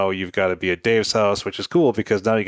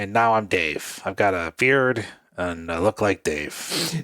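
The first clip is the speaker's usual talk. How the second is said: slightly raspy, rougher, slow, drawn-out voice. Pretending to be Dave, who is not here, in a slightly raspier Dave voice. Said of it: "I'm going to make my voice a little bit raspier".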